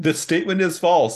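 very high-pitched, loud shouted yell. During a dice game, voicing the character Rowan yelling at something. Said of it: "Rowan will yell".

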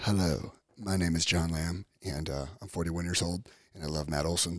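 murmured, hushed, low, very soft voice. Imitating how a co-host talks on the podcast: imitating John. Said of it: "And then John talks like this".

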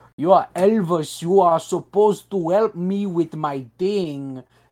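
thick Southern cartoon-villain accent. Imitating a movie character in a side-by-side clip: Tom Hanks's thick Southern accent. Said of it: "he doesn't have a thick accent".

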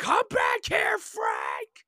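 very loud, very high, swooping, drawn-out scream. A fan acts out an actor screaming at The Rock's character, retelling a scream. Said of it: "He's just screaming".

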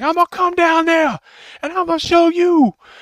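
very loud, very high, shrill exasperated frustrated scream. Speaker retells a prank call where a caller screams at an uninterested man, imitating frustrated screaming. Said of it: "he gets more and more frustrated".

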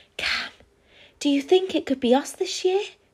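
hopeful, high-pitched whisper. Waiting for the sleigh announcement, one hopeful asks another; whispering. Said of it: "whispered Bron".

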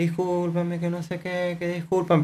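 very hushed, soft, pleading voice. Retelling how a woman spoke when apologizing, imitating a quiet apologetic voice. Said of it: "como bajito pidiendo perdón".

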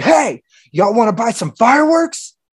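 very high, shrill, loud, pushy aggressive call. Retelling a man popping out of a truck to sell fireworks, imitating his aggression. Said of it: "pops out aggressive as fuck".

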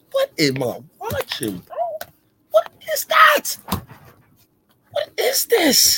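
very high, swooping, incredulous voice. Watching a basketball game and a player's contested jumper, surprised, disbelieving. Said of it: "You sound like you're surprised".

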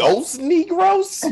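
put-on light New York–New Jersey accent, very high, loud. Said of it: "What was that accent you just did?".

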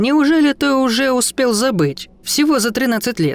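smirking, mocking delivery. Reading a many-mouthed creature addressing a hesitating man, smirking. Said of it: "усмехнулась толпа".

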